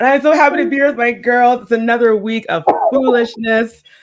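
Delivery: ordinary delivery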